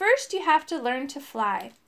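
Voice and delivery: ordinary delivery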